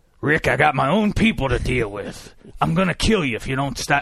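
menacing TV villain voice. Talking about a show, see if you can do him: address Rick in an impression of the Governor. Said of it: "let me see if I can do him".

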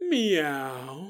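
flirty, horny, drawn-out suggestive meow. Showing how a horny man might say meow, suggestive meow. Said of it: "he was saying it in a very suggestive way".

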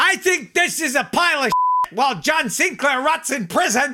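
very high-pitched, shrill yelling. Retelling a heckle from the stage: imitating Abbie Hoffman shouting. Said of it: "and shouting".

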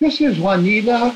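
very high-pitched put-on Mexican accent woman's voice. Retelling a man's disguised voicemail calls, the speaker does his put-on Mexican female voice. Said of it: "It's like he was a Mexican female".

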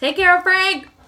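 loud, high-pitched yelling. A player's character yells back while running away: yelling. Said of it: "I'm gonna yell".

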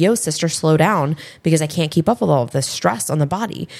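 ordinary talk

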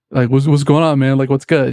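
put-on American accent, casual chatting tone. Greeting close friends coming in one by one, the speaker uses an American accent. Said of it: "I would talk in an American accent".

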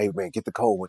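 very quiet, hushed, breathy whisper, barely there. Telling the story of a blind kid's envelope pick, retelling a whisper. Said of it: "he just whispered".

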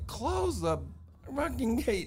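acted-out very high, swooping scream. Retelling what Neil screamed at the speaker, retelling a scream. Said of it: "Neil is screaming at me".

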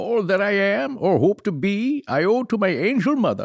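goofy put-on voice, lifted up high in pitch. Quoting a line Abraham Lincoln said, doing Daniel Day-Lewis as Lincoln. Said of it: "that's my impression of Daniel Day-Lewis doing his impression of Lincoln".

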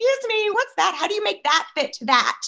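put-on obnoxious, pestering, very high-pitched voice. Retelling asking store staff questions: retelling own obnoxious questions. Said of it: "My voice wasn't like that when I was asking them".

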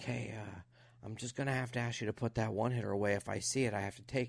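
quiet, hushed half-whisper. Retelling how the guy who checked their things spoke, imitating the guy's half-whisper. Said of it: "he whispers".

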